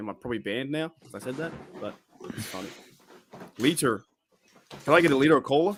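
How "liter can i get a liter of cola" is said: mocking, put-on American accent. Mocking americans the way others do, in a mock american accent. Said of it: "use Lito in your accent".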